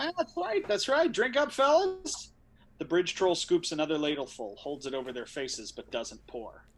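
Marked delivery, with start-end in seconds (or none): 0.0-2.3 unsettlingly cheery tone, very high. A bridge troll gives Ben and Max water: uncomfortably cheerful human voice. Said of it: "speaks in an uncomfortably cheerful human voice".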